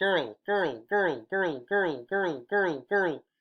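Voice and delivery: slow, muffled speech through a hand cupped at mouth. Showing how a word sounds different, spoken through a cupped hand. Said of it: "Put it up to your mouth like that".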